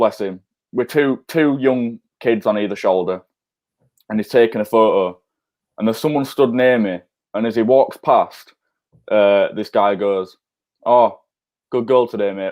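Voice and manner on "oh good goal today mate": mock muttering under his breath. Recalling a man nearby as Bamford walks past, muttering under his breath. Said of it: "under his breath".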